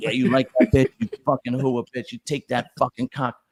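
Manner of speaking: put-on loud voice. Retelling own past words during sex: retelling loud dirty talk. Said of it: "I'm not a quiet fuck".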